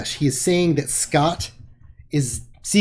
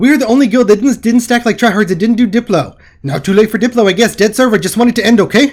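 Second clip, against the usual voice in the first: sped-up, rapid-fire, very loud, high chatter; 5 semitones higher, 9 dB louder than usual. Reading lines in the voice of a fast-talking guild player, imitating Alicus very fast. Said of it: "I have to talk as fast as possible because Alicus's voice".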